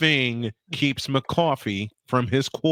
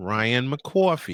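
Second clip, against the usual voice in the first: put-on New York accent, words spat out, blurted; 2 semitones lower than usual. Retelling how a name slipped out on the show: New York accent. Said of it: "I spit out in my New York accent".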